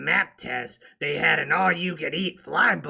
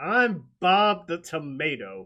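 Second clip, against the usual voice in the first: plain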